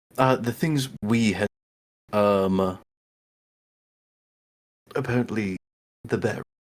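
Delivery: speaking in a hushed whisper. On a group recording where others say the mic is too quiet, whispering. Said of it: "You're quiet".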